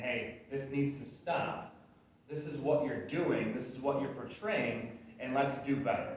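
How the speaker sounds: ordinary talk, nothing marked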